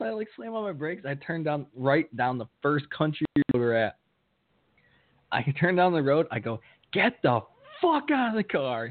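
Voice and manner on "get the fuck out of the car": all-out high, swooping scream. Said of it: "we're screaming in the car".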